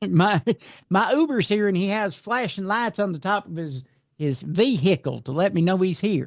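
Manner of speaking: put-on Georgia-style Southern drawl, laid on thick. Hosts joking about an accused man; one acts out his words: southern accent. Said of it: "I'm going to get crap for doing a Southern accent".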